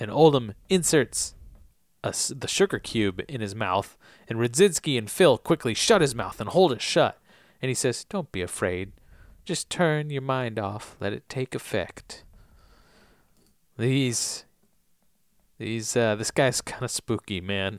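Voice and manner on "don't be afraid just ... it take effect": put-on soft, gentle southern accent, quieter. Retelling a man's words in a story, soft southern voice. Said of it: "He says in a soft southern voice".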